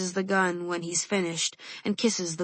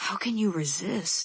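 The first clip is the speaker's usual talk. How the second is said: quiet muttering under the breath. Reading a story aloud, voicing Ezra nudging the narrator: under his breath. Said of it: "he asks under his breath".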